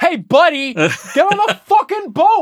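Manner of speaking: put-on New York accent. Imitating an impatient boat worker from a stereotypical New York: stereotypical New Yorker voice. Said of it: "especially in the stereotypical New York".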